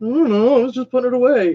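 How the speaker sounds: high-pitched, fast, clueless-sounding voice.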